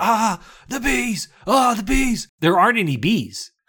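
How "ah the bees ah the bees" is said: mock, hammy, long, high-pitched screaming wail. Retelling a movie scene with bees poured into a mask: imitating a scream. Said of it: "and he's screaming".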